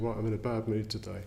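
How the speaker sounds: ordinary talk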